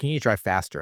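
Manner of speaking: ordinary talk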